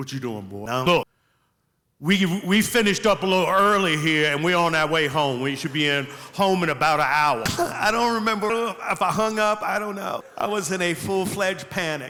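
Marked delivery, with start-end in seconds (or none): 0.0-7.4 fatherly voice. Retelling a phone call from the speaker's dad to the audience; imitating his dad on the phone. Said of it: "I'm gonna try to do it so y'all can feel my fear".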